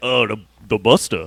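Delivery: bad tough-guy voice, deep and slow. Quoting a film scene in a terrible Vin Diesel impression. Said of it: "forgive my terrible Vin Diesel pre-, impression".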